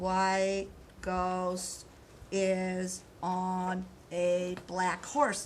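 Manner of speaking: very slow, halting, word-by-word reading aloud. Showing the class how a student was reading: imitating slow reading aloud. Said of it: "this is how he was reading".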